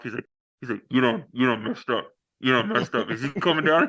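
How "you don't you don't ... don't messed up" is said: put-on muttering, muffled through a covered mouth. Retelling a movie scene, imitating Will Smith talking behind his hand. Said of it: "Will Smith's covering his mouth".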